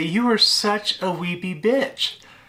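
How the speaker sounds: words spoken through laughter. Retelling what a coworker would say across the desk, imitating someone laughing while talking. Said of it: "she would laugh and say".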